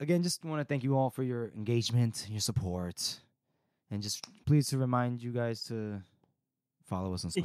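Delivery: worn-out, drained, tired, weary delivery. Podcast host reminding listeners to follow on social media, sounding tired. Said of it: "sounds so tired when you say that".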